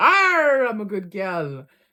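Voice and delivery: loud, swooping, put-on pirate voice. Bantering about being sent to the naughty corner, in a pirate voice. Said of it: "It's a pirate's life for me".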